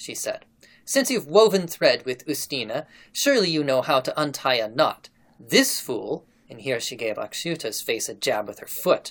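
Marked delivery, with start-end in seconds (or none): none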